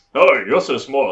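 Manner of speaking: put-on, really posh ogre accent. Describing two ogres who have posh accents in her head; posh accent. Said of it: "they've got this really like posh accents".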